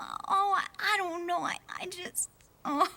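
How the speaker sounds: tearful, crying while talking. Answering why she is crying, crying while talking. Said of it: "what on earth are you crying about".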